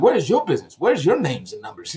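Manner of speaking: normal talking voice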